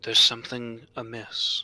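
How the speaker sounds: stage whisper with audible voicing. Game master voicing a mysterious voice half-whispering to a player; quiet half-whisper. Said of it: "this kind of voice kind of whisper to you quietly".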